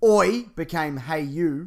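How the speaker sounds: plain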